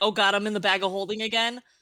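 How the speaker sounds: sudden, fast, brief, panicked burst. Voicing Helga in a brief panic: brief panic. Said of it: "Helga has a brief panic".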